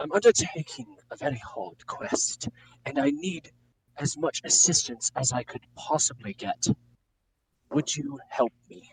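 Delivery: coaxing, pleading tone. Playing a questing hero asking a group of peasants for help: persuasive plea. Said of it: "try to persuade people from the group".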